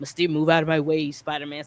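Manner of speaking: low, fast, ominous, menacing villain voice. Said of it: "she's kinda ominous".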